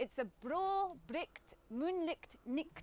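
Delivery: put-on Scottish accent. Teaching a listener a scottish tongue twister, in a scottish accent. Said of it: "brings to life the Scottish the Scottish dialect".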